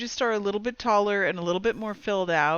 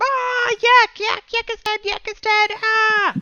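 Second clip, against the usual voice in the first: very high, very loud, shrill, panicked goblin screams; 9 dB louder than usual. A storyteller voices goblins whose comrade was just shot, panicked goblin screaming. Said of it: "start freaking out screaming like".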